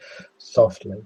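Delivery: plain reading voice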